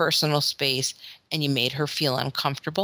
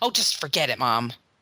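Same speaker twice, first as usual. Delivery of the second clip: put-on frustration, much lower pitch; 3 semitones lower than usual. A mother retelling her daughter's reply when asked to repeat herself, mimicking daughter's frustration. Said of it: "she gets frustrated if you don't hear".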